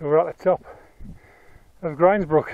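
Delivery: winded, breathing hard. Having just come up to the top of Grindsbrook, out of breath. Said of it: "Excuse my out of breathness".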